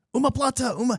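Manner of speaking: very high scream at the top of the lungs. Retelling shouting out a technique during a match: retelling a scream at full volume. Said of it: "I was screaming at the top of my lungs".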